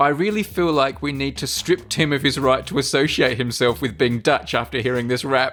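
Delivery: ordinary delivery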